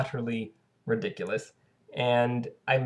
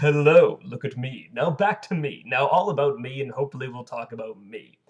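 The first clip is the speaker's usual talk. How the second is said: loud, booming TV commercial pitchman voice; 5 dB louder than usual. Speaker acts out people greeting friends after watching the commercials: Old Spice commercial voice. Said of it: "developed an Old Spice voice".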